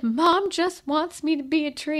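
put-on tearful, sniffling, sobbing child's voice. Retelling what a boy said after getting in trouble, imitating a crying child. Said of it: "And he's crying".

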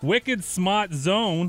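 attempted, hammed-up Boston accent. Reporting where a large table of diners came from, in best Boston accent. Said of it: "here's my best Boston accent".

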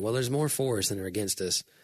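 ordinary delivery

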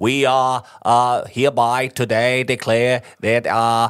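put-on drawling Boston accent, very slow. Quoting Quimby from The Simpsons to show a Boston accent: Mayor Quimby voice. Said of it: "har hørt med Quimby sige".

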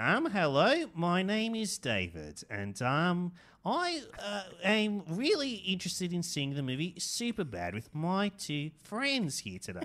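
high, slow, sing-song funny voice, halting with ums. Retelling what a friend said at the cinema: imitating a friend's funny voice. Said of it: "he had a very funny voice".

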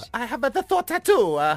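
attempted Spanish accent. Asked by a co-host to redo a woman's line in Spanish, attempting a Spanish accent. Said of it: "can you please do it in Spanish?".

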